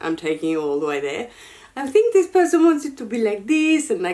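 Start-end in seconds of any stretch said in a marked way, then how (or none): 1.8-4.1 musing put-on French accent, pitched up. Mimicking bag designers imagining what the buyer wants, in a french accent. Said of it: "I'm doing a French accent".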